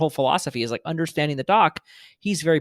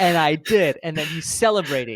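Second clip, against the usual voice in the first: plain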